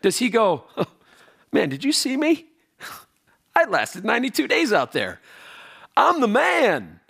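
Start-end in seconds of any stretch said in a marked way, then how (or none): 1.5-6.8 high, boastful show-off swagger. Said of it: "he doesn't talk like that".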